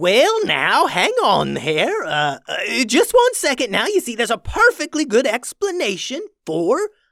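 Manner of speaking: high, loud stumbling stammer with swooping pitch. In a read story, Hambone faces disgusted diners, stumbling over his words. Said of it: "the [name] suspected [name] of stealing barbecue bee sauce from the various beehives all around the island. / and he spun around in shock. / the [name] suspected [name] of stealing barbecue bee sauce".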